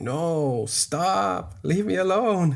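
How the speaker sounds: high, slow, very drawn-out little dinosaur voice. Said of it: "he sounds like a little dinosaur".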